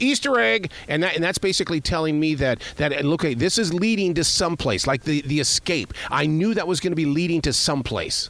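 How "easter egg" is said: high, loud calling out. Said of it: "and loudly go".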